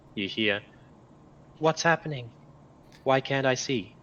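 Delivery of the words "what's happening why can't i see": put-on voice of a very young little girl. Narrating a voice the players hear in their minds, very young girl's voice. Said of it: "you hear the voice of a very young girl".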